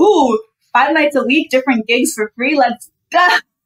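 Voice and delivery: ordinary talk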